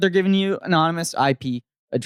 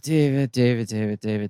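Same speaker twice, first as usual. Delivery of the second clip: sighing, much lower voice; 8 semitones lower than usual. A stressed speaker addressing his friend by name; sighing. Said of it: "Why are you sighing".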